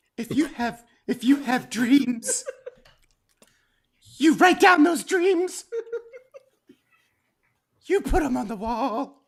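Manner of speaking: high, warbly, tearful voice. Doing a man's voice the way he affects it: high-pitched crying voice. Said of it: "I'm gonna try and do his voice too... high pitched voice... a crying kind of speech pattern".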